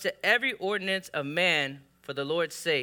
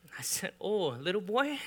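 ordinary delivery

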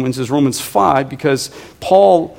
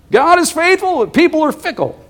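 squeaky, very high, silly, funny put-on voice; 14 semitones higher than usual. Repeating a college pastor's favorite saying in his funny put-on voice. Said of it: "That wasn't his normal voice".

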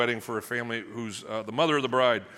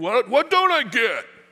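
angry outburst, very loud and high-pitched; 11 semitones higher, 8 dB louder than usual. Acting out a husband answering his wife, imitating an angry husband.

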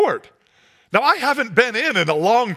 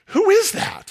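hushed murmur, whispered, pitched very high; 10 semitones higher than usual. Retelling a crowd's murmur at a basketball game: imitating a hushed crowd whisper. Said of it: "hushed, you know, whisper".

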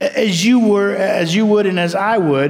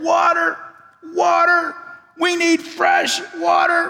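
desperate, crying-out voice. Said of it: "cried out with just parched lips".

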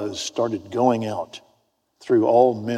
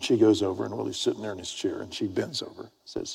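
ordinary talk, nothing marked

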